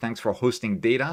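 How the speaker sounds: usual speaking voice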